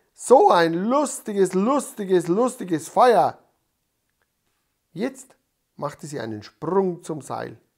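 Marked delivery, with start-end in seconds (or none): 0.2-3.4 loud, high-pitched shout at full volume. A girl in the glow of a big fire, shouting loudly. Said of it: "schrie sie laut".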